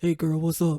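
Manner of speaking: fake, put-on man's voice. Comparing voices, showing off a put-on man voice. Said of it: "My man voice".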